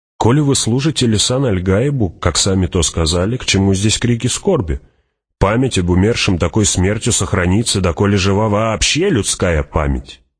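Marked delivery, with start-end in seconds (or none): none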